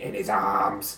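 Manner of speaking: creepy, eerie voice. Recalling one of the characters a performer voiced, in a creepy exorcist voice. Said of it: "a really creepy exorcist voice".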